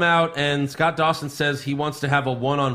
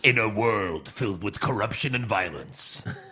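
movie-trailer announcer voice; 6 semitones lower, 5 dB quieter than usual. Comparing an announcer to the Machete trailer narrator, a speaker imitates him: Machete trailer voice. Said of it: "the guy that does that did like the trailers for Machete".

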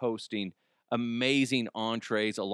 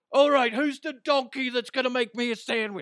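loud, very high-pitched holler; 14 semitones higher, 5 dB louder than usual. Doing a quick impression of a chef demanding a sandwich: Gordon Ramsay impression. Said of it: "that's my Chef Ramsay impression".

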